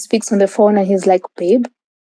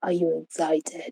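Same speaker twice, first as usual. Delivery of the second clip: low, husky, seductive murmur; 4 semitones lower, 13 dB quieter than usual. Retelling a man making advances on the way to meet his parents, imitating his husky voice. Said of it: "He had a husky voice".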